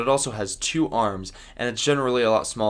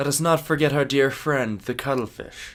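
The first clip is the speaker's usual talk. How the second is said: bad put-on pirate voice; 4 semitones higher than usual. Wrapping up a talk about cuttlefish, quoting a pirate: bad Captain Jack Sparrow impression. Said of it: "As Captain Jack Sparrow would say".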